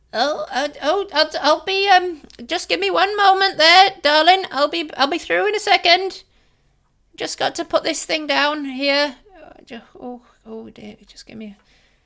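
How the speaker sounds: slight, small, little voice. Someone in the back room calls out as visitors walk in, little voice. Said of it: "you hear a little voice from the back room go".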